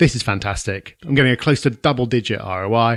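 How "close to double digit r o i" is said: normal talking voice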